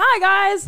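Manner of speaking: put-on, high-pitched, over-eager, bubbly excitement. Showing the voice others put on for the camera: mock extra high-pitched excited voice. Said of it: "talk with an extra high-pitched voice or seem extra excited".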